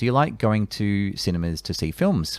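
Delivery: ordinary talk, nothing marked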